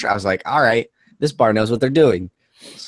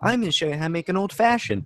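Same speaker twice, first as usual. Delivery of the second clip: mock ditzy girl voice, higher and quieter; 8 semitones higher, 5 dB quieter than usual. Retelling a video of a girl making an old-fashioned: imitating a bimbo-y girl. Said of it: "this bimbo-y girl in this super fake bar setup".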